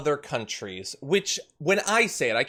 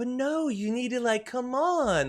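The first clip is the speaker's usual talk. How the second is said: high, slow voice used on puppies; 9 semitones higher than usual. Imitating how an interviewer spoke to Trump: imitating a puppy voice. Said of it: "he's doing puppy voice to Trump there".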